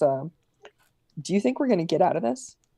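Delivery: very quiet, hushed voice. In a game, a character speaks while the others prepare for a fight, very quiet. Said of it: "he kind of he says very quietly".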